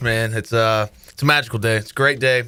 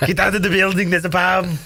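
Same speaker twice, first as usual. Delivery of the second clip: put-on Austrian accent, higher; 8 semitones higher than usual. Doing a movie bomb line: Arnold Schwarzenegger impression. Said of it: "I can only do bomb and chopper".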